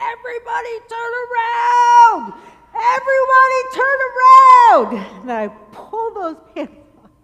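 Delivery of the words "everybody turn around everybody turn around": very loud, high, top-of-lungs scream. Telling a story about being stung, reenacting yelling at everyone, retelling a top-of-lungs scream. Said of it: "scream at the top of my lungs".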